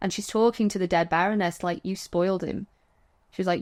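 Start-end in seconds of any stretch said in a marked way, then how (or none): 1.8-2.7 put-on dry, flat, expressionless deadpan. Describing a scene where Greta addresses the dead Baroness, imitating Greta's deadpan. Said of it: "she deadpans".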